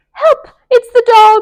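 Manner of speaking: very loud, very high, shrill, terrified squeak. Narrator reads Melissa's cry when a dog barks in the hall: squeaky frightened Melissa voice. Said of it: "Squeaked Melissa".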